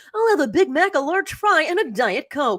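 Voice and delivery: TV newscaster voice. Mocking people who use news reporter voices by imagining a McDonald's order: news reporter voice. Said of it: "I know that's not your real voice".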